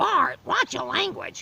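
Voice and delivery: very high, creaky cartoon voice with a rough rasp. Showing off the only female voice they can do: Marge Simpson voice. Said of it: "You surprised I can do the impression of Marge?".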